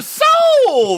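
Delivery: soul shouted very high and stretched out long. Told to say 'soul' like Soul Train for the episode: Soul Train-style 'soul'. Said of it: "you have to say it like Soul Train?".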